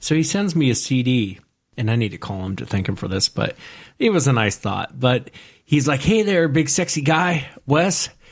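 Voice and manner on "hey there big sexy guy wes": slow, pitched-up radio DJ announcer patter. Quoting the man who sent a christmas cd, in a radio dj voice. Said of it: "almost like a radio DJ".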